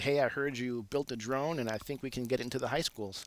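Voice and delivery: ordinary talk, nothing marked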